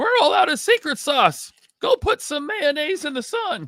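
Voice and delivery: pitched way up with swooping. Remind listeners of the fast food worker from The Simpsons, in the Simpsons fast food worker voice. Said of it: "sound like the fast food worker from The Simpsons".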